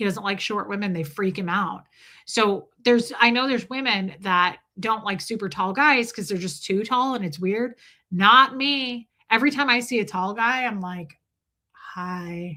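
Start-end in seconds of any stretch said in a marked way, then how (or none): 11.7-12.6 sexy voice, lower and quieter. Retelling greeting a tall guy: imitating own sex voice. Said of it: "I suddenly have sex voice".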